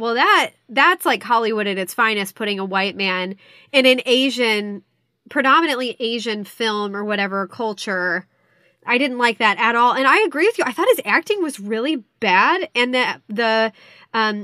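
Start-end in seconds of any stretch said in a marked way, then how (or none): none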